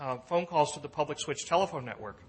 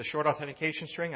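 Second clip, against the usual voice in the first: "short" pressed out and stressed. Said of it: "I emphasize the word short authentication string".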